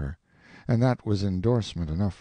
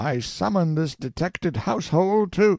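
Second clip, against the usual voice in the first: very high, booming, thundering priestly voice; 9 semitones higher, 4 dB louder than usual. Narrator voicing Father Adolf addressing the household, thundering in his great voice. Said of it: "Then Father Adolf rose up, flushed and excited, crossed himself, and began to thunder in his great voice".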